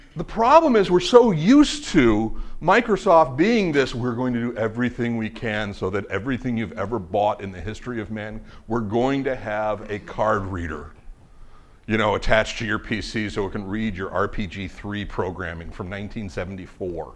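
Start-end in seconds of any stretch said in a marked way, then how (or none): none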